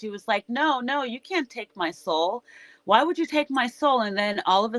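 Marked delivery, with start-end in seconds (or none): 0.5-4.0 acted begging, pleading, arguing protest. Retelling how she argued with the unicorn, imitating someone arguing and pleading. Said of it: "she was like arguing with the unicorn".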